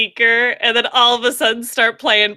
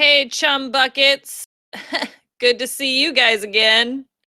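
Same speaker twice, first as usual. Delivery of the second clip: snide, ironic, sarcastic fake-friendly tone. As others pull rats off them, a character greets the group: sarcastic greeting.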